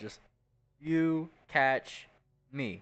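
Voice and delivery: dry, sarcastic, mocking delivery. She answers the offer to catch her, giving that look; sarcastic. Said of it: "says like sarcastically out".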